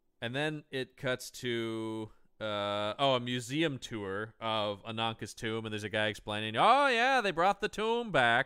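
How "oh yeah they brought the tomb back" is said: put-on Maine accent, pitched up. Quoting a guy explaining on a museum tour: put-on Maine accent. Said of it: "I'm giving everyone a main accent here".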